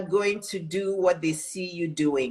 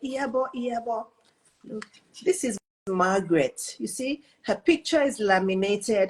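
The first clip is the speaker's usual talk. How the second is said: put-on pleasant British accent; 3 semitones higher than usual. Retelling what Mister Award said showing his late wife's picture, in his British accent. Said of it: "with his nice British accent".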